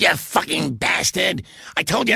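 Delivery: high, rough, raw, furious screamed outburst. Telling of hearing Rod Hull through a dressing room door, retelling Rod Hull screaming. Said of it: "And he's like screaming".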